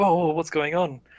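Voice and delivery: startled, jolted voice. Voicing a half-asleep guard who jumps up: startled guard jolted awake. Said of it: "he sort of jumps to his head".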